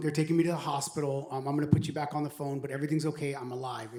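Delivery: plain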